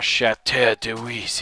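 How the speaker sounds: name said with a put-on French accent. Naming the cleared building patch, as always with that accent: put-on French accent. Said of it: "I always have to use that uh, accent when I say that".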